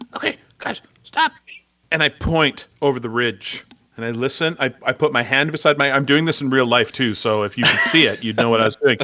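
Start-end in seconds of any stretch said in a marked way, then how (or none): 0.2-1.3 hushed, high-pitched whisper under the breath. Playing a character signalling the group to halt: whispered under breath. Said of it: "whispered under my breath".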